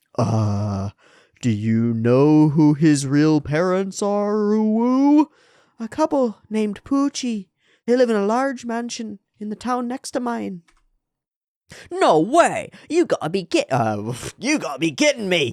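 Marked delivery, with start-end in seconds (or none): 11.9-15.6 put-on, swooping London Cockney accent. Reading a character's line aloud in a game: Cockney accent. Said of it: "some Cockney gutter slanging gits out here".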